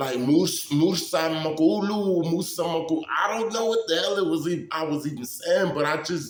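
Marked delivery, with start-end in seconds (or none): 0.2-3.0 slow, drawn-out, deliberate babbling of nonsense syllables. Retelling praying over a dying man: imitating speaking in tongues. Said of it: "I was speaking in tongue".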